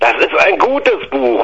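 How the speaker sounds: mild, token bellow. The narrator answers an uncle who rejects the gifted book: bellowed back. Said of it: "brüllte ich zurück".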